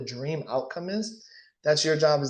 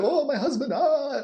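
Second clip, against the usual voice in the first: acted very high, drawn-out, bawling sobbing wail; 12 semitones higher, 3 dB louder than usual. Retelling a woman's reply after she started bawling her eyes out, imitating her sobbing. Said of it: "she started bawling her eyes out".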